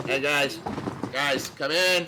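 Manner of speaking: put-on slightly drunk, tipsy, loud calling out. A tipsy character being carried in calls to the others: tipsy voice. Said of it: "kind of tipsy voice".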